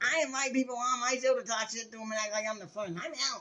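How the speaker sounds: mocking, whiny, high-pitched voice. Mocking a talk-show host, the speaker does her voice; whiny Ellen DeGeneres impression. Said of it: "Try to do Ellen's voice".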